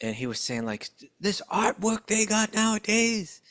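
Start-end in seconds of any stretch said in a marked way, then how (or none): 1.0-3.2 worked-up preacher voice, higher. Retelling a class where the speaker preached all worked up: imitating Bhakti Tirtha Swami preaching. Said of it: "kinda like a gospel preacher".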